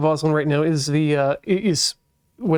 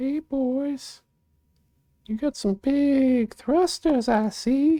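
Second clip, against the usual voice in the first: very high silly voice, heavily stretched; 10 semitones higher than usual. Checking weight balance, the speaker greets the big thrusters in a put-on voice. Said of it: "Don't know what I'm using this voice".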